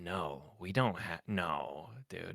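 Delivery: very slow, drawn-out, revolted, disgusted tone. Retelling the electronics counter dude's answer: imitating a disgusted reply. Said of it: "so disgusted".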